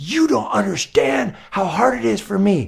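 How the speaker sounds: put-on heated, high rasp. Retelling a friend's wife snapping back at a suggestion: imitating someone angry. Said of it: "she got so angry at me".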